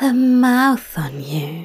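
exasperation tinged with fondness. Reading a story aloud, Aziraphale answers Crowley, exasperated but fond. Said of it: "exasperation tinged with fondness in his voice".

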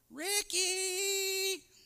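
very high, long, drawn-out calling yell. Recalling a mom in the neighborhood yelling a kid's name, imitating a mom yelling. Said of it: "I can hear a mom yelling".

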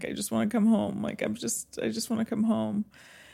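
high, put-on crying, tearful pleading voice. Recalling a phone call to their mom, the speaker imitates their own past crying. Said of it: "crying on the phone to my mom saying".

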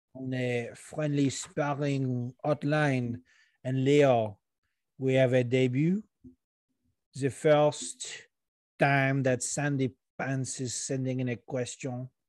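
put-on French accent. Introducing a listener's first voicemail question, in a put-on french accent. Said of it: "I'm using this French accent".

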